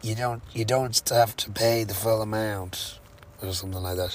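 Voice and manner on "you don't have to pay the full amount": put-on strongly American accent, slow and unhurried. Retelling what Lucy said when the speaker was short of money: very American accent. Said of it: "In a very American accent".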